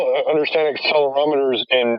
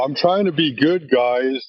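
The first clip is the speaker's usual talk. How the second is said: mock sad puppy dog voice, slower. Retelling how a man came in and spoke to the group, mock sad puppy dog voice. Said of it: "with this little sad puppy dog voice".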